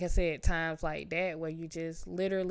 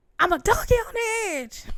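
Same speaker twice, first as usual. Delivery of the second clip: very high, very loud, shrill, stressed yell; 9 dB louder than usual. Retelling being stressed and tired during an exam: retelling own yell. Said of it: "I just yelled out".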